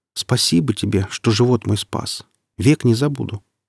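ordinary delivery

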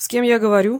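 icy, chilly, cold tone. A voice Valery already knows asks who is on the line, cold. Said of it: "холодно спросил уже знакомый Валерию голос".

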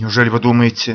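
ordinary delivery

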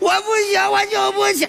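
fake grief-stricken, high, shouted tone.

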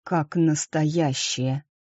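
hushed whispering. Narrating a story, a man watching costumed mummers whispers to a woman. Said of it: "прошептал Марине".

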